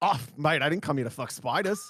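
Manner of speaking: put-on Australian accent. Rewording a line someone just suggested, Australian accent. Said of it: "with the Australian accent".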